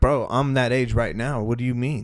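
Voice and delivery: ordinary talk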